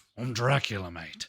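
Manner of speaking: put-on movie pirate character voice. Playing Dracula in a put-on voice: Jack Sparrow voice. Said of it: "it's just Jack Sparrow".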